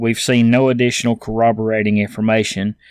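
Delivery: ordinary talk, nothing marked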